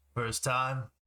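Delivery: gruff gravelly voice. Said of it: "this kind of a gruff gravel voice".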